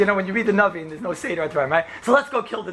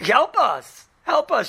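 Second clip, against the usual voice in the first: very slow, drawn-out, desperate scream; 6 semitones higher, 4 dB louder than usual. Reading a scripture passage aloud, voicing a woman who screams for help. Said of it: "she screams".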